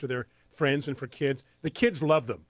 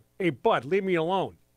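brusque, put-on New Jersey accent; 3 semitones higher than usual. Joking about a plant that needs little care, voicing it in a new jersey accent. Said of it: "It's a New Jersey".

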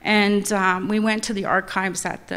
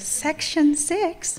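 put-on high young woman voice; 8 semitones higher than usual.

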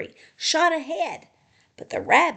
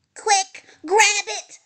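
loud raised shouting; 8 semitones higher, 5 dB louder than usual. Littlest Rabbit calls to the other animals as the nut springs up, shouting. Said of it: "shouted Littlest Rabbit".

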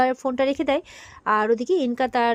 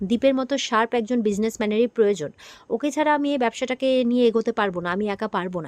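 normal talking voice

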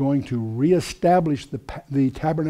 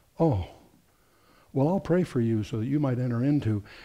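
put-on crestfallen, sarcastic tone; 3 dB quieter than usual. Retelling a minister's reply to a Pentecostal: imitating Walter, mock crestfallen sarcasm. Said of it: "would just fall crestfallen".

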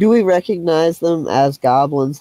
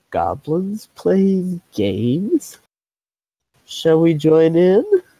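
slow, gentle delivery. A player speaking in character to companions while watching goblins, soft-spoken. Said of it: "I'm going to look back at my companions and say softly".

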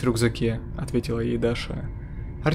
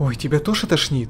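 fearful, frightened voice; 4 semitones higher, 3 dB louder than usual. Narrator reading the line of a companion returning to the group, frightened voice. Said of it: "раздался испуганный голос".

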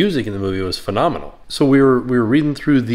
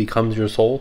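ordinary talk, nothing marked

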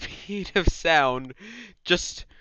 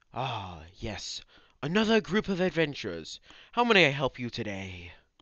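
put-on low, very old, ancient half-elf character voice; 5 semitones lower, 4 dB quieter than usual. Narrating a tabletop game, a hundred-year-old half-elf greets adventurers: very old half-elf voice. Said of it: "silver-haired half-elf who's like about 100 years old".

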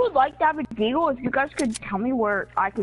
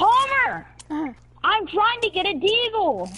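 pitched-up, screaming-style delivery; 6 semitones higher than usual. Gamer on a stream calling out to Palmer, screaming. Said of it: "you're screaming on a stream".

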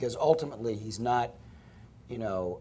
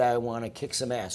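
ordinary delivery

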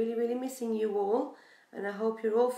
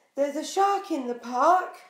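full-voiced, loud, high storybook yell; 5 semitones higher, 7 dB louder than usual. Narrator reading Timothy's line as he looks all around, shouting in loudest voice. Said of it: "In his loudest voice, Timothy shouts".

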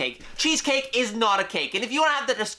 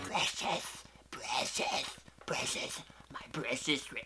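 creature voice, much quieter and lower; 7 semitones lower, 12 dB quieter than usual. The speaker says they can do a nice Gollum impression, then does it. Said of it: "I can do a nice golem impression".

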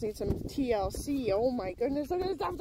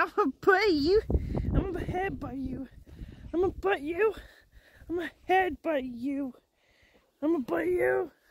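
playful, teasing put-on pet voice; 4 semitones higher than usual. Voicing the pet threatening to head butt: voicing the pet threatening playfully. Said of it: "She's like".

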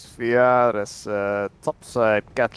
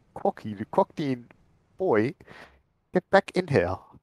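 put-on British accent; 3 semitones higher, 3 dB quieter than usual. Retelling a match, the speaker quotes Sorali, imitating Sorali's British accent. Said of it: "Sorali said something in British as well".

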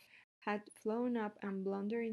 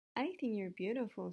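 plain reading voice

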